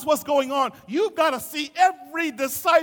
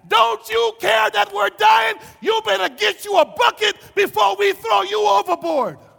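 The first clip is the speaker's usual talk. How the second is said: put-on rough, high, frantic, freaked-out yell; 6 semitones higher, 5 dB louder than usual. Retelling the disciples waking the sleeping Jesus: retelling the disciples yelling. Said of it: "And they yelled at him".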